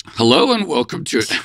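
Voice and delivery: voice totally shot, hoarse and worn-out. Welcoming listeners at the top of the show, voice shot from last night, hoarse. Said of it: "My voice is totally shot".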